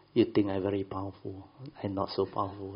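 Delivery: normal talking voice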